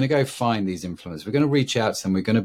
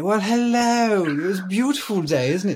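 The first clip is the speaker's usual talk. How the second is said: very high, thick, over-the-top put-on English accent; 11 semitones higher than usual. Showing how to say a line, go overboard: exaggerated strong english accent. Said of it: "in the strongest English accent you can possibly do".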